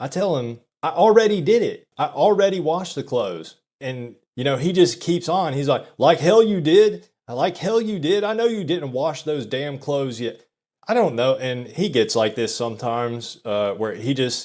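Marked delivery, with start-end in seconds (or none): 6.0-10.4 mock yelling, much higher pitch. Speaker retells their dad yelling at them after drinking, retelling dad's yelling. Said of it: "he's just yelling at me about this".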